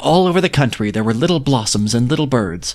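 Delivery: ordinary delivery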